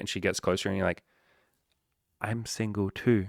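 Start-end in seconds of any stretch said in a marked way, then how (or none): 2.2-3.3 mock whispered, secretive tone. Acting out telling her a secret after she leans closer: a whisper. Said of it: "I'll whisper".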